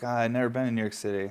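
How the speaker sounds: ordinary delivery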